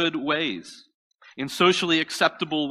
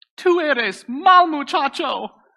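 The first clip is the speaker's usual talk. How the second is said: put-on high, loud voice of a three-year-old toddler; 11 semitones higher, 5 dB louder than usual. Retelling what a three-year-old said to him on the stairs, in his little high-pitched voice. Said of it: "in his little three-year-old high-pitched voice".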